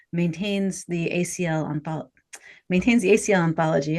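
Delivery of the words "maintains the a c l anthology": rushed, rattled off too fast. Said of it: "I'm talking too fast".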